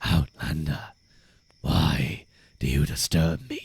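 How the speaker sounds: very low, grumbling video game character voice. Trying out a voice for a game NPC, in a grumbly NPC voice. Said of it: "It's more grumbly".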